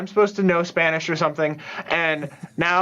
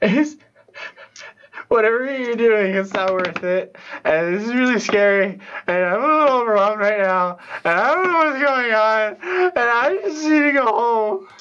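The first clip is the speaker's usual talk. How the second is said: acted, rushed, tearful crying, on the verge of tears; 4 semitones higher than usual. Playing a character who is overwhelmed and scared, crying in character. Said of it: "I am going to start crying".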